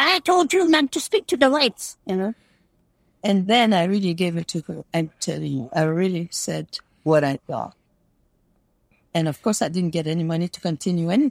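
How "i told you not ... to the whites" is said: very odd, strange-sounding, high-pitched voice. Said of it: "she had a very weird voice".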